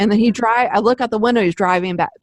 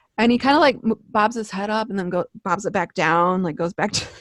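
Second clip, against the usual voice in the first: ordinary delivery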